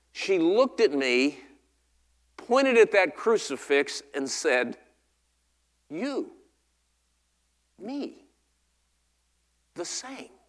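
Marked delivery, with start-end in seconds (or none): 5.9-10.3 put-on hushed little-girl voice, very soft, broken English. Retelling what a little Vietnamese girl said pointing at a crucifix, little girl's broken English. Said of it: "in her little voice, in broken English".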